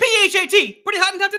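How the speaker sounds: very high, cranked-up, loud, showy voice. Doing the one voice available for the line: Chris Tucker voice. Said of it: "I only have Chris Tucker from Money Talks".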